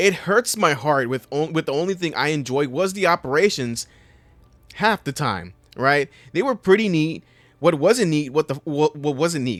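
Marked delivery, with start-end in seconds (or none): 7.6-9.6 stuttering, stammering, increasingly angry. Complaining about a game's copy-and-paste mission design, stuttering and getting mad. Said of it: "I'm I'm stuttering so hard because I'm starting to get fucking mad".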